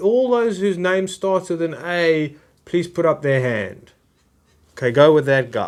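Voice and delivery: acted cold, methodical, mechanical voice, no warmth. Acting out an afterlife official sorting the dead: cold machine-like official. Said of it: "It's machine-like".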